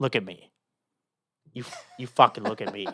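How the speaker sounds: put-on menacing tone. Retelling what a cab driver said about the fare: imitating the pirate in Captain Phillips. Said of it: "he did it like the, the, the pirate in Captain Phillips".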